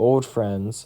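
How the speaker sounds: ordinary delivery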